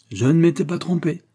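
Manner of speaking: exclaiming. Narrator reading a French novel gives Thomas Burton's line, exclaiming. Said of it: "s'écria Thomas Burton".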